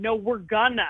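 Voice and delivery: acted, freaked-out, urgent, panicked, insistent tone. Retelling insisting that a friend pull the car over: imitating panicked insistence. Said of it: "And so I'm freaking out".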